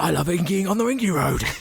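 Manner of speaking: strong Australian accent. Discussing the War Boys' accents, quoting a line in a strong Australian accent. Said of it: "That sounded incredibly Australian".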